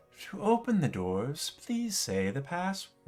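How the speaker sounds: calm, cool, soothing, slightly high voice. Narrating a game, the speaker voices a voice heard at a wall: cool soothing voice. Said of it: "a cool voice, uh, soothing voice".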